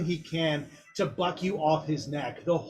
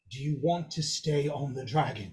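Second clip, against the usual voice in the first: close, intimate half-whisper; 4 semitones lower, 4 dB quieter than usual. Storyteller voicing a character who wraps his arms around the listener, half-whispering. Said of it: "he's going to whisper in your ear".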